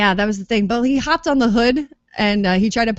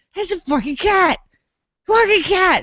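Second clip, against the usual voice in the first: shrill, very high, screaming shriek; 9 semitones higher than usual. Retelling how a hysterical man got in a guy's face, retelling a man's screaming. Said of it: "got in his face like".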